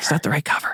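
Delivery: hushed whisper under the breath. Retelling how she came downstairs about the pot cover: imitating someone whispering. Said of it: "comes downstairs and whispers this".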